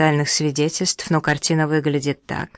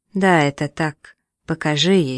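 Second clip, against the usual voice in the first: plain reading voice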